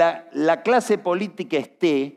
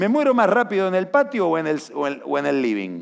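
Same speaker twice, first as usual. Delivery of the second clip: ordinary delivery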